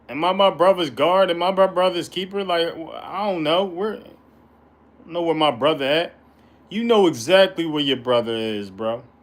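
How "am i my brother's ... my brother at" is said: plain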